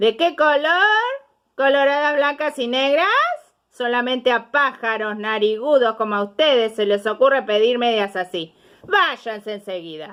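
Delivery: shouting, high-pitched. Reading a story, a shopkeeper answers flamingos at his store: shopkeeper shouting. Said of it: "Y el hombre dijo: / Y el hombre dijo".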